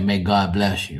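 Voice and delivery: ordinary talk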